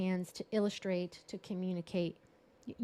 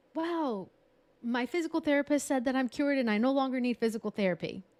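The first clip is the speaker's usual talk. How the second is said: bright, high-energy, pitched-up energized delivery; 5 semitones higher, 4 dB louder than usual. Illustrating how you'd share some great news: high-energy delivery. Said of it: "My energy goes up".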